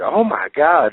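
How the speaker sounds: loud, high, over-the-top screaming outcry. Retelling a mother's reaction to a wrestling moment: imitating someone screaming. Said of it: "she screamed out".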